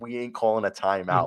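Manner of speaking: ordinary talk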